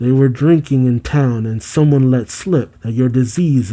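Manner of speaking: ordinary talk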